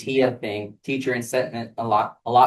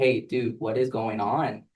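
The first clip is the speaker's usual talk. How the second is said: acted aggressive tone, quieter; 4 dB quieter than usual. Retelling confronting a student about missing work: imitating own aggressive tone. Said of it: "talking to him kind of aggressively".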